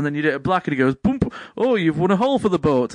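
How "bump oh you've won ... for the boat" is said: mocking, sarcastic delivery. Retelling a game show host's quips: imitating a sarcastic host. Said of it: "loads of sarcastic answers".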